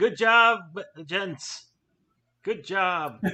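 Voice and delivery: shouting in character. Congratulating the others in character across the room: yelling. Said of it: "I'll yell out".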